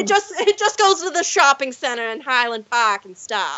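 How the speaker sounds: Massachusetts accent. Describing local places while admitting uncertainty, in a Manchester by the Sea voice. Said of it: "you just lapsed into your Manchester by the Sea voice".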